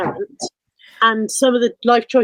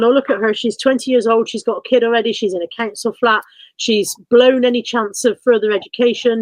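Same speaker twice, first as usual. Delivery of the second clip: usual speaking voice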